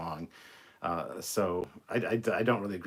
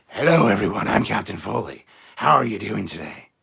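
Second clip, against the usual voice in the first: very loud, overblown, over-projected announcer voice; 11 dB louder than usual. Advising against projecting at the microphone, imagining an over-projected Captain Foley voiceover. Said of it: "Don't project your voice like this".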